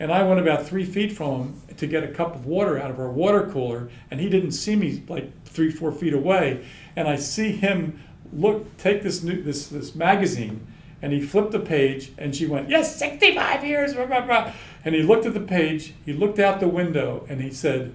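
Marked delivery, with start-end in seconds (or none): 12.7-14.5 shrill, very high-pitched, very loud voice. Recalling a man reading a magazine, quoting a woman's words, imitating a very loud voice. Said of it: "in this very loud voice".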